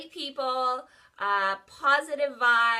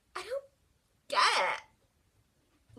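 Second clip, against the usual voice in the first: play-acted, slow, high, very drawn-out, swooping bafflement; 8 semitones higher, 3 dB quieter than usual. Retelling what a girl in a parking garage said: imitating a dumbfounded girl. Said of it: "literally in that voice".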